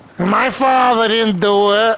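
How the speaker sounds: put-on whiny girl's New York accent, words drawn out. Imitating the daughter of a mob hitman: whiny italian new york girl accent. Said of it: "With that that that like whiny fucking like Italian fucking girl accent".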